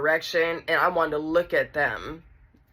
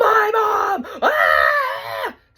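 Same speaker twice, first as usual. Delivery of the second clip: shrill, piercing, ear-splitting high shriek at full volume; 6 dB louder than usual. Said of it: "Screaming at the top of her lungs".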